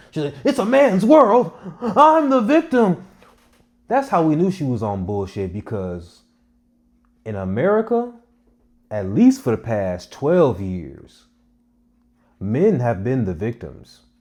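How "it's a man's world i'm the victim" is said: acted, shrill, very high screeching scream. Retelling a woman who screamed after being fired, imitating her screaming. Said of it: "She was screaming at the top of her lungs".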